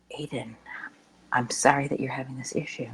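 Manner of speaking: voice kept very low and soft. Showing how to speak to a screaming child: very low, quiet voice. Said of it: "as I continue to have my voice, like, really, really low".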